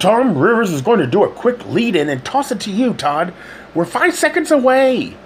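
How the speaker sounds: very high, barked delivery. Narrating the producer in the control room speaking to Todd before he goes live, barking. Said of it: "she barked".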